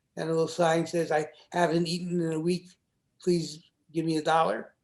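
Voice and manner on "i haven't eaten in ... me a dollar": plain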